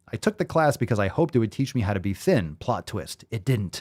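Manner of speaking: plain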